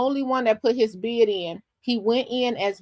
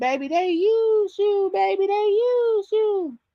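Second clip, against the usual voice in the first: slow, drawn-out, very high-pitched character voice; 9 semitones higher than usual. Reacting to a candidate left to run alone: Thelma Price voice. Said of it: "I had the Thelma Price voice".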